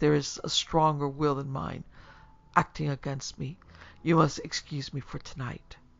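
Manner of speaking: ordinary delivery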